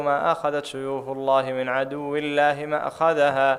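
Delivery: ordinary talk, nothing marked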